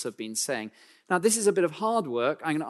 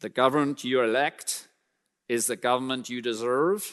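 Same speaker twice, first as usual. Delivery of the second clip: put-on American accent, put on; 4 semitones lower than usual. Quoting what Jefferson supposedly said to the Americans: put-on American accent. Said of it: "That's my American accent".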